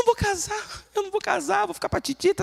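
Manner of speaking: put-on high, distressed, heartbroken teenage girl's lament. Acting out a girl's words after a boy rejected her, mimicking distress. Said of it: "aquela crise".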